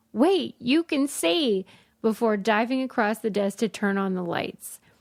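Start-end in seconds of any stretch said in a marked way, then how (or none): 0.1-1.6 alarmed, panicked, booming, high-pitched yell. Reading a personal story aloud, voicing a man's sudden line as a booming panicked yell. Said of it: "yelled in this booming voice".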